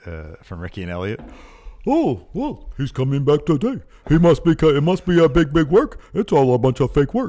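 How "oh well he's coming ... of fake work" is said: loud, dopey, pitched-up dumb-guy voice. Talking about wrestling, the speaker does a favorite voice: stupid people voice. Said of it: "That's a stupid people voice".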